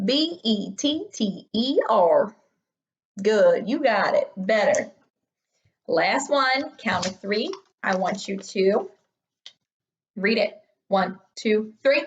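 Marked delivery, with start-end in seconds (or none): 0.0-2.3 very slow, drawn-out country cowboy drawl. Spelling a word aloud when asked to, in a cowboy voice. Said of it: "spell this word in a cowboy voice".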